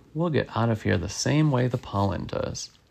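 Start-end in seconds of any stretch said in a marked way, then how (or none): none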